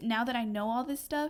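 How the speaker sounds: ordinary delivery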